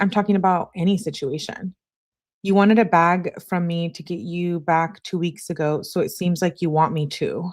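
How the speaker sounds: ordinary talk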